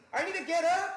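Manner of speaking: very high, loud and sarcastic.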